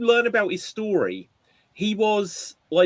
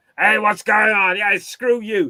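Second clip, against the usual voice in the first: put-on loud, higher-pitched, rude, drunk, snarling voice. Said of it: "doing the same character".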